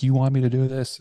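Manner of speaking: screamed at full force. With a pistol to his head, the speaker retells screaming at a woman, retelling a scream. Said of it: "I'm screaming at her like".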